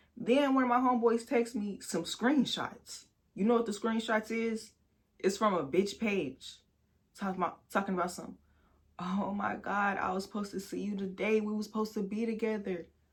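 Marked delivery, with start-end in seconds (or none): 9.0-12.8 distressed, pleading, lamenting woman's voice. Retelling a woman's story from screenshots a friend texted, mimicking a distressed woman. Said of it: "This bitch is on her story in distress".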